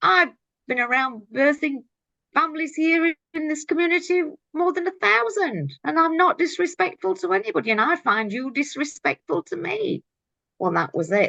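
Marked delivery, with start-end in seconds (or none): 0.0-10.0 put-on high-pitched yelling. Retelling standing up at a hearing to speak out, retelling own yell. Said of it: "I just stood up and yells out".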